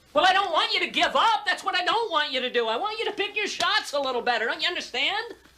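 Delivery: full-on high-pitched yelling. During a family argument before dinner, one family member yelling at another. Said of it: "until you all stop yelling".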